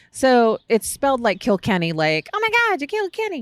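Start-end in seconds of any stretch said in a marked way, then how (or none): 2.4-3.5 deliberately lousy cartoon voice, pitched very high. Joking about a beer name: horrible South Park impression. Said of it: "horrible imitation of no particular South Park".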